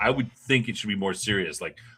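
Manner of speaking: ordinary talk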